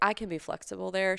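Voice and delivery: ordinary talk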